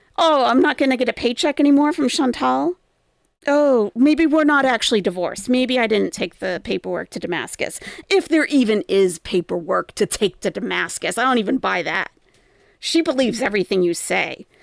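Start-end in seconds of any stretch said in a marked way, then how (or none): none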